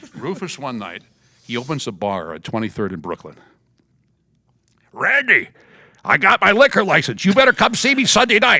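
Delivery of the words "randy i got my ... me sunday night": shrill, very loud, high wrestler-pal voice. Speaker retells Rufus inviting him to his new bar, imitating Rufus. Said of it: "He talked like this".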